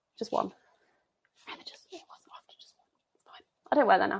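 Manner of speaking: soft, hushed whisper. Toasting viewers on camera with a friday glass of fizz, whispering. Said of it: "I don't know why I'm whispering".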